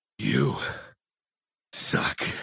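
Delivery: rough, creaky, raspy, blunt put-down tone. Retelling how a character replied, imitating Stevie's voice. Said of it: "Stevie just replies by going".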